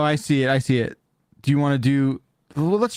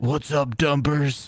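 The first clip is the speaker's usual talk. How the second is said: put-on gravelly hero voice. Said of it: "Batman would never say this".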